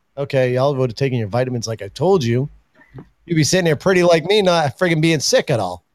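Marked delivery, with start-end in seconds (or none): none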